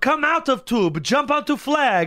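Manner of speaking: put-on high-pitched voice with Italian accent. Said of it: "high-pitched Italian voice".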